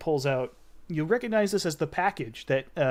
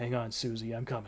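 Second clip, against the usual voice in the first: whispered aside, lower and quieter; 4 semitones lower, 8 dB quieter than usual. Voicing a character leaving the room: whispering under his breath. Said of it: "you kinda hear him whisper under his breath".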